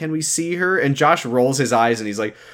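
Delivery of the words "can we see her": put-on crying, higher pitch. Recapping an episode, acting out a character's plea while imitating someone crying. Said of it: "Lori is crying for obvious reasons".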